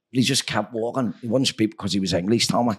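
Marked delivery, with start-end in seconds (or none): none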